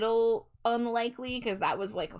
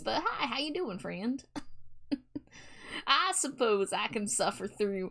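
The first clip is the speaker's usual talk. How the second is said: goofy, put-on cowboy voice; 2 semitones higher than usual. Speaker, doing a voice someone paid for, greets a friend: cowboy voice. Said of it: "Score Bunny paid for for yeehaw voice".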